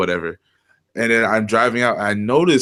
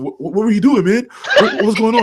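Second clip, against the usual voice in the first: frightened, panicky, very high, rushed voice; 11 semitones higher, 4 dB louder than usual. Retelling a traffic stop, imitating the officer sounding scared. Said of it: "And he sounds scared".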